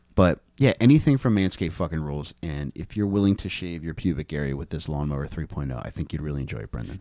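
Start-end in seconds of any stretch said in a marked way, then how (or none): 2.5-7.0 dropped, low, hushed voice. Reading an ad line to Brendan while looking into his eyes: dropped, lowered voice. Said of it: "Could you not drop your voice like that".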